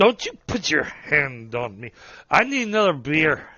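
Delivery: put-on drunk, riled up and belligerent. Grabbed and told to leave, a drunk pulls free and protests: riled-up drunk. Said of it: "He's a little wiry. / And the guy gets all riled up, / Plus, he's drunk".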